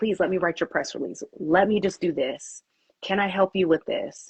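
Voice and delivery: plain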